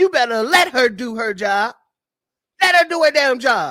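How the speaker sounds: loud, scolding scream. Reading out a post that is screaming at readers: imitating someone screaming. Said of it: "he's screaming at you now".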